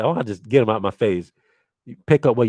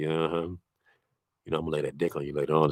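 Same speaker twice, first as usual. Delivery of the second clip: half-whispered sweet tone, very quiet and soft; 6 semitones lower, 12 dB quieter than usual. Retelling what was said into a woman's ear: imitating own half-whisper. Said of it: "So I'm just whispering".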